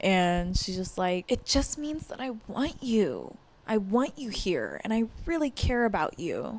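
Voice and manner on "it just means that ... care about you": mimicked sudden, abrupt tone switch, quieter. Retelling what a woman said to a man: imitating her sudden tone switch. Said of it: "immediately switches her tone".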